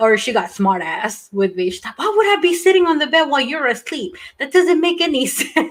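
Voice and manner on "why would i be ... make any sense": put-on sassy, snippy and sharp Filipino accent. Retelling what mom said: imitating mom's Filipino accent. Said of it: "I can hear her in the accent".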